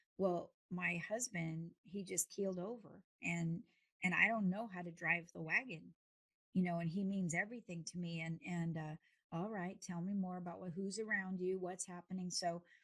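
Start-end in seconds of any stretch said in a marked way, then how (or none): none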